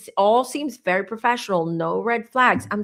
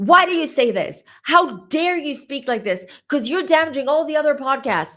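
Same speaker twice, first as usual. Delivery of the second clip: furious woman, high, angry screaming; 5 semitones higher, 3 dB louder than usual. Speaker recounts a woman who came in hot at him; imitating a woman screaming. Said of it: "She basically started screaming at me".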